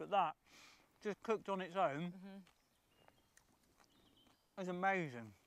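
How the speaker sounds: speaking while chewing, mouth full of food. Ending a cooking video while eating, talking with mouth full. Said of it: "because I'm stuffing my face".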